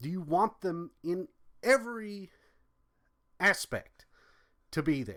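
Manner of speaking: exasperated and fed up. A speaker pressing the audience with rhetorical questions, sounding frustrated. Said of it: "Do you hear the frustration in my voice?".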